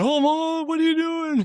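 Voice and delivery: put-on very high, anxious, worried little girls' voices. Mother retelling how her two girls reacted, imitating worried girls. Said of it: "my two girls are all worried".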